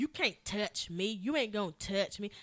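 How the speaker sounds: put-on sassy voice with attitude. Retelling what someone said when they came in: imitating someone with attitude. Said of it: "they come in with attitude".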